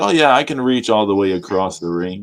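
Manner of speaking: usual speaking voice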